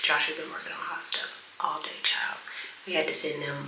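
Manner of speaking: soft, hushed whisper. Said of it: "that's why I'm whispering".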